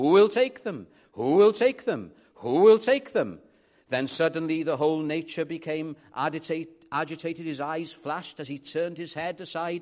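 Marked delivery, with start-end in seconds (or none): 0.0-3.4 very loud, high-pitched cry at full voice. Narrator recounts a man holding out his arm, retelling a top-of-voice shout. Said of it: "at the top of his voice he shouted".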